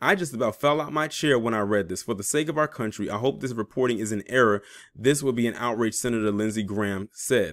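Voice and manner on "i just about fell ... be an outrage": ordinary delivery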